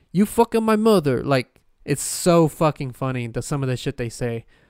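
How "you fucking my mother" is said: clumsy fake Indian accent, pitched up. Describing how people cuss others out, in an attempted indian accent. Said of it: "That was my attempt at an Indian accent".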